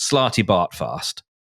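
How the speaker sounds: accent from southern England. Saying a character's name aloud, done in a Southern English accent. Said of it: "So I will do it in the Southern English accent".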